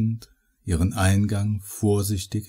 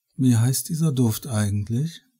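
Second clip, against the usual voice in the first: sleepy, drowsy, higher pitch; 3 semitones higher than usual. A woman asks the man a question as she drifts off, sleepy. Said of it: "fragte sie schläfrig".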